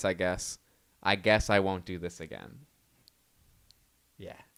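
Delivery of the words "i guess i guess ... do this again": put-on unruffled, even-keeled, low-voiced calm delivery. Retelling what a woman said with an alligator around her leg, imitating her calm voice. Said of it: "in a calm voice".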